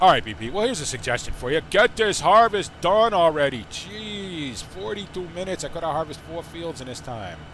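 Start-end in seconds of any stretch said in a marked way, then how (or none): 1.7-7.4 really bad put-on New York accent, Jeez drawn out. The speaker gives a suggestion in a really bad new york accent. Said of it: "in that really bad New York accent".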